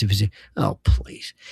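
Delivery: whispery, breathy, put-on British accent. After praising british accents, imitating one british speaker: british accent impression. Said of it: "the one who talks like this".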